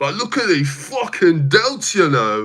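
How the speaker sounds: shoddy, rough, put-on British accent. Talking to stream chat, quoting someone in a shitty UK accent. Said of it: "I can't do his accent because I don't know. I'm just doing a shitty".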